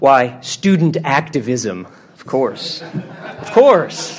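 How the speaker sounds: mock solemn, slow, sarcastic, laughing through it.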